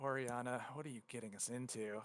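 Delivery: muttering. Voicing a sighing dwarf who turns to a companion: muttering. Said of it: "as he mutters over to her".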